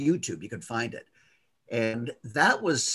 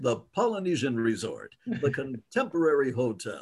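put-on theme-park announcer style delivery. Saying Disney resort names the only way possible, in a put-on announcer voice. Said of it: "I can't say any Disney words like that without saying it like that".

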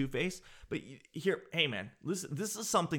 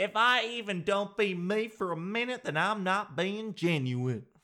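put-on American Southern accent, raised pitch; 6 semitones higher than usual. Mocking what people say about being genuine, in a put-on southern accent. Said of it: "I don't know why I put that southern accent on there".

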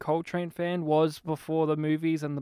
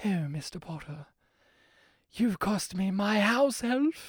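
very feminine, effeminate kind of posh voice; 3 semitones higher, 3 dB quieter than usual. Describing an actor's voice in a role: effeminate posh Jason Isaacs voice. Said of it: "he has a real effeminate, posh voice where he's just very like".

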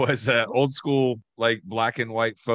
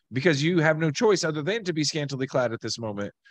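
normal talking voice

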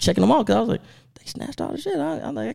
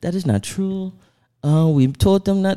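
put-on heavy Colombian Spanish accent; 3 dB louder than usual. Retelling what a woman on Instagram said: thick Spanish accent. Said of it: "she had a thick Spanish accent".

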